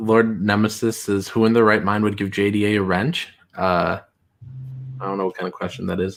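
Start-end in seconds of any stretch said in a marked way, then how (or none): none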